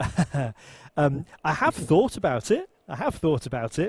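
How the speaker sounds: light chuckle running through words. Answering a question Alex is asking, chuckling.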